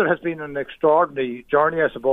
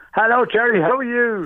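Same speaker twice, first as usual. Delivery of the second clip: cheerful, happy, pitched-up delivery; 8 semitones higher than usual. Shopping centre manager on a radio call, greeting the host, sounding happy. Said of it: "I just hear that in your voice".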